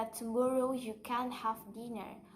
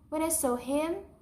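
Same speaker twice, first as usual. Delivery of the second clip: upward lift in pitch at the end, on him; 3 semitones higher, 5 dB louder than usual. Teaching how to signal more to say: rising pitch on 'him'. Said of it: "raise your pitch at the end of the phrase".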